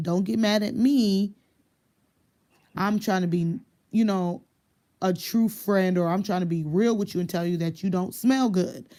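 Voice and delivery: ordinary talk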